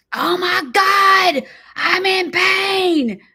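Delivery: very high, very slow, drawn-out pained wailing yell. The speaker retells someone screaming in pain all night, imitating the yell. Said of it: "like yelling".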